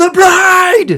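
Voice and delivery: high, loud shouted delivery.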